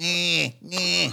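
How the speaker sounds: high, fake Australian-accented crying baby voice. Joking about which babies would be most annoying, mock australian baby crying. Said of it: "Imagine crying in Australian".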